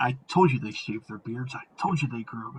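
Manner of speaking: secret-sharing, hushed, half-whispered stage whisper. Describing a book called Tumbler's Delight, retelling a half-whisper. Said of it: "you hear a whispered voice being like".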